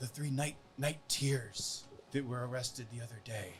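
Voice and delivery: hushed voice. Retelling a man who leans in to speak, in a lowered voice. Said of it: "he kind of lowers his voice and leans in".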